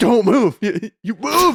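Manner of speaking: high, loud, angry snapping voice.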